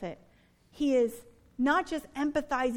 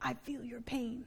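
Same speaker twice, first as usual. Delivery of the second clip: soft, hushed put-on voice. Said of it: "That's my best Clinton impression".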